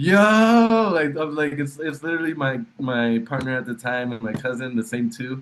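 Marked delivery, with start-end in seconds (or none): 0.0-0.9 super excited, very high, loud drawn-out shout. Retelling coming out of the room: retelling own excited shout. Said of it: "super excited".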